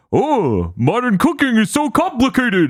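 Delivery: slow, drawn-out delivery swooping up high. Retelling a sitcom commercial scene, imitating Barney. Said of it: "if you think my voice is extremely far removed".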